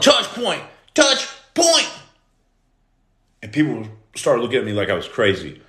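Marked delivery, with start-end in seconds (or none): 0.0-1.9 mock high-pitched yell. Retelling two days out on house arrest, the speaker acts out yelling. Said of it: "So I started yelling".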